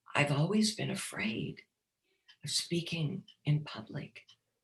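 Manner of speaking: very tiny, hushed, barely-there voice. Retelling what a man said after being asked if there was something else, very tiny voice. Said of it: "in a very tiny voice said".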